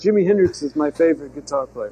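speech delivered in broken English. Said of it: "he speaks broken English".

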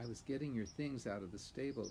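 plain reading voice

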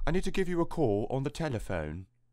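soft, standard, trained-actor British accent. Explaining the british accents actors learn, demonstrating an essential british accent. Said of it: "they learn what is known as more essential British accents".

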